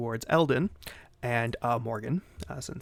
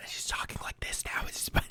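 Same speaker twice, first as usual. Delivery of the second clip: lowered, hushed, breathy whisper. Showing how someone talks after being signalled to lower her voice: lowered quiet voice. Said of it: "like lower your voice".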